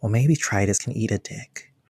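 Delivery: hushed under the breath. Voicing Hayden's line with the voice lowered really low. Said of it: "lowers their voice really low".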